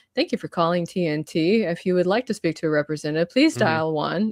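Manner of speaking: automated phone menu recording voice. Showing the range of a voice-over profile, automated phone greeting voice. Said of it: "it's like".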